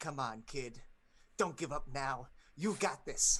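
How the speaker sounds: very loud, small, wasp-like creature voice. Voicing a small masked creature encouraging a wounded character: voice of a small wasp-masked creature. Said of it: "it's just this voice that's saying".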